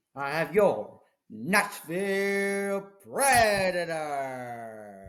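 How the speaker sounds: slow stadium PA announcer voice, words stretched out. Announcing a hockey pick to another speaker, imitating an arena pa announcer. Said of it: "You sound just like the P A guy".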